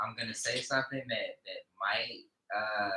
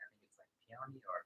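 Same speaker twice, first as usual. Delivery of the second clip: soft, fast, barely audible speech. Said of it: "Say it louder for the people".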